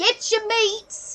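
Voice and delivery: boisterous, booming voice. Voicing a small meat seller calling out in the snow: boisterous voice of a small woman. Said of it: "a boisterous voice that comes from a woman far too small for it".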